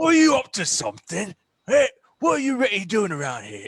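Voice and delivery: very high, loud, swooping not-quite-Cockney East London accent. Showing the other speaker an accent they said they like: East London accent. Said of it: "not quite Cockney, but it's, you know, the, what, East London".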